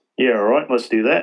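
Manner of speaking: put-on Australian accent with twang. Act out her exact reaction to hearing about the job offer, with an Australian twang. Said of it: "her exact reaction with her Australian twang".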